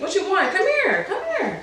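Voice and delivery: put-on high, singsong, cooing baby talk.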